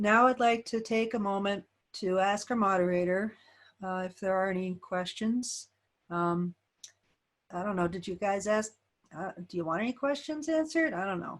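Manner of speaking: halting, unsure delivery with no enthusiasm. Demonstrating what a speaker sounds like when not enthusiastic: unenthusiastic. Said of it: "what it sounds like when I'm not enthusiastic".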